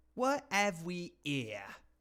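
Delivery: h-dropping Cockney accent. Two speakers discuss how Cockney speakers talk; one demonstrates a Cockney accent. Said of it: "That's how they say".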